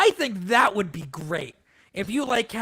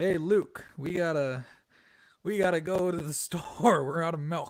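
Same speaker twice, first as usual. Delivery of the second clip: put-on smooth actor voice, lower; 3 semitones lower, 4 dB quieter than usual. Imagining an actor voicing teenage Grogu: Billy Dee Williams voice. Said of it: "get Billy D Williams to voice teenage Grogu".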